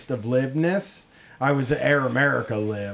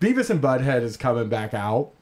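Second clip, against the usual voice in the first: ordinary delivery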